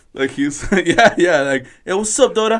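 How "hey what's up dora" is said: put-on high-pitched voice with East LA accent.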